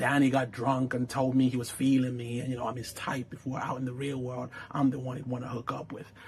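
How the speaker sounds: very soft, very quiet half-whisper. Retelling a show scene where a cast member half-whispers back: imitating a half-whisper. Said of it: "Gia whispers back".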